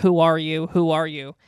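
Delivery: ordinary delivery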